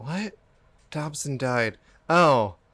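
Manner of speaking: slow, groggy, drowsy, half-asleep voice. Retelling reading texts just after the alarm: imitating a groggy voice. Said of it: "but I'm still so groggy".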